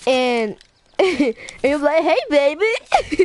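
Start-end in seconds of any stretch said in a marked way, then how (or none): 2.0-3.3 odd, weird, high-pitched put-on country accent. Describing a classroom scene, the speaker voices the guy in a weird country voice. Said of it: "in some weird country voice".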